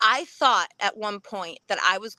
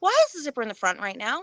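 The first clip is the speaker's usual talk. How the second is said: plain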